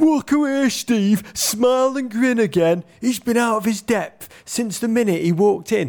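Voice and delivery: very high, shrill, furious bellowing angry shout. Retelling an English journalist chasing someone out of a press conference, retelling a journalist's bellow.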